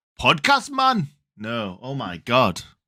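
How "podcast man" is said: put-on high, botched Norwegian accent sounding Jamaican. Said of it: "that's Jamaican".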